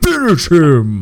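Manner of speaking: loud announcer voice. Urging another speaker on after a joking threat: Mortal Kombat announcer voice. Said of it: "Bit, bit of Mortal Kombat".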